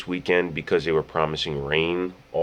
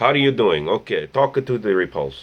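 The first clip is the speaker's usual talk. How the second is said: put-on Russian accent; 4 semitones higher than usual. Greeting viewers in Tony Stark's voice, Tony Stark with Russian accent. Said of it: "he is Russian now".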